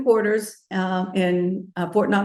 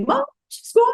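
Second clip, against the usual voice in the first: put-on very high, shrill child's yell. Retelling how a daughter called out about the baby: imitating a child yelling. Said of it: "So she yelled at me".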